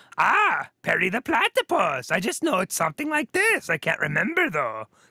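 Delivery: throaty, swooping, drawn-out cartoon villain voice. Trying to recall how a cartoon villain from a show sounds, in a throaty Doofenshmirtz voice. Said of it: "like a throaty Kermit the Frog kind of".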